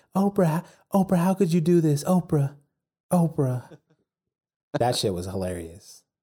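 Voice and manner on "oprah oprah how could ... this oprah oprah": high, loud whisper-yell. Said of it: "she'd just be yelling in a loud whisper".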